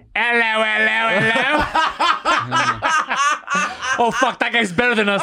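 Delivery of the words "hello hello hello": high, mock British accent. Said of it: "that guy sounds professional".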